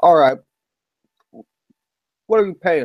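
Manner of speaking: talking with mouth full. A character sits munching food at a table and speaks, talking with a full mouth. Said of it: "kind of with a full mouth".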